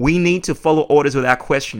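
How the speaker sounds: normal talking voice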